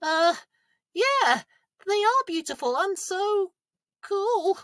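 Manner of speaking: very high scared voice. Asked to look at the swans in the park, a character answers: scared. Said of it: "You sound scared".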